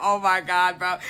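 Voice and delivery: play-acted frantic, panicky, freaked-out outburst. Retelling a rushed taxi ride, late for a boat: imitating her own panic. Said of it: "I was freaking out".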